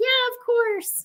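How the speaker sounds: acted, very high-pitched, crying through the words. Retelling answering a friend's adoption offer: retelling own tearful reply. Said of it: "as I'm, like, crying".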